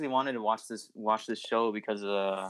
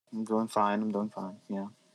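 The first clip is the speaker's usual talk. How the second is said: flat, unexcited, unenthusiastic tone. A teenage guest on a podcast answers the host's greeting, flat and unexcited. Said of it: "Don't sound too excited".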